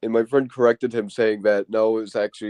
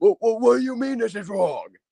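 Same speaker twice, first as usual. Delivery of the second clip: mock shrill, very high, angry yell; 12 semitones higher than usual. Speaker imitates a boy arguing with the teacher over a wrong answer: retelling an angry shout. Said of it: "he will shout in the freaking room saying".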